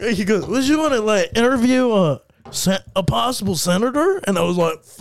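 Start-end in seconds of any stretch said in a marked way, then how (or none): 0.5-4.2 put-on slurred speech, slower. Retelling what a man said to the speaker, imitating slurred speech. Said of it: "Like slurring".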